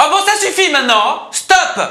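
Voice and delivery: exasperated shouting, very high-pitched and very loud. Testing whether anger changes the voice, the speaker demonstrates an angry outburst. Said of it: "ça c'est moi quand je m'énerve".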